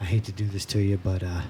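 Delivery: imitated quiet talking. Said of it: "talking real low".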